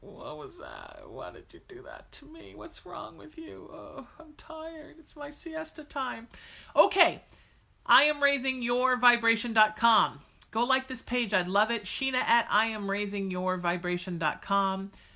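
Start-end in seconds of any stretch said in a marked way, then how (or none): 0.0-6.3 high, swooping, drowsy put-on cat voice. Voicing what the sleepy cat seems to say: voicing a cat, put-on sleepy. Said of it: "all sleepy".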